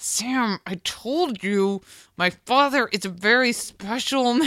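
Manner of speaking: side-of-the-mouth aside through gritted teeth. Speaker showing how she should have delivered the aside to her husband, through gritted teeth. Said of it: "Sam through gritted teeth, like the side of her mouth".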